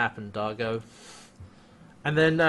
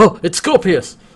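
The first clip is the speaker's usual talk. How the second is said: high, loud startled cry. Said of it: "Crichton looks at him and is like".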